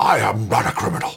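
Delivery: American accent, put on for show. Can't do an American accent, so quoting as Richard Nixon: Richard Nixon American accent. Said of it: "I can only do Richard Nixon".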